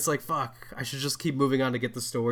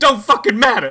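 put-on very high, loud, shrill outburst on the verge of tears; 10 semitones higher, 13 dB louder than usual. Quoting a movie scene, imitating Kevin Hart near tears. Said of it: "He sounds like he's about to cry".

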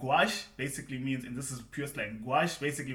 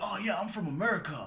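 bad, over-the-top, put-on American accent; 6 semitones higher than usual. Retelling how someone said he was from america, in the worst american accent. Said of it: "the worst American accent you can think of".

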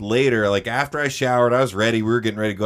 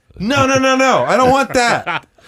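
high, loud, panicked voice. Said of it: "And I was like".

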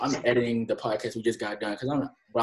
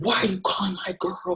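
acted, high, jealous screaming; 8 semitones higher than usual. Retelling what a man yelled after picking up the phone, retelling a scream. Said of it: "he's screaming".

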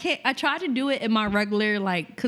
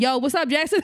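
put-on, very loud talking, close to the ear; 4 semitones higher, 4 dB louder than usual. Imagining someone interrupting focused work: imitating someone talking loudly. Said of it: "somebody talking real loud on your ear".

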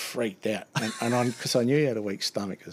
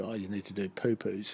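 imitated mocking tone, quieter; 3 semitones lower, 7 dB quieter than usual. Retelling how the supervisor answered a call about the toilet: imitating a mocking supervisor. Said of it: "mocked me".

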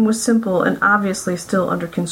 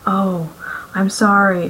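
hushed, softly whispered. A woman replies to an old man holding his wife's reading glasses, whispered. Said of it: "she whispered".

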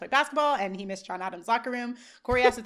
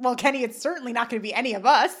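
normal talking voice

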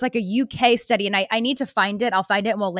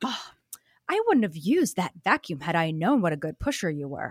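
put-on completely serious, low, dead serious tone, no joking; 5 semitones lower, 6 dB quieter than usual. Retelling what the doctor said after the birth: imitating a dead serious tone. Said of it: "And she said it dead serious".

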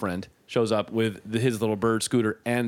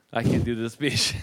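usual speaking voice

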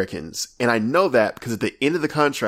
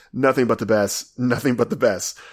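usual speaking voice

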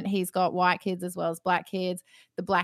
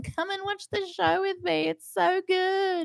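very high-pitched laughing while crying; 11 semitones higher, 3 dB quieter than usual. Streamer recalling calling the kids to come watch the show: retelling laughing and crying. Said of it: "laughing and crying, going".

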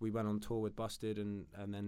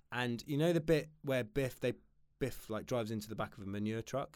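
ordinary talk, nothing marked

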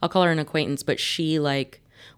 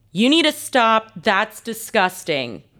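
put-on high, swooping, scolding yell; 6 semitones higher, 4 dB louder than usual. Speaker retells telling off a little boy: retelling a yell. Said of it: "I yelled".

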